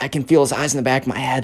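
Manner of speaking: whispered voice. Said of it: "Benjamin kinda whispers".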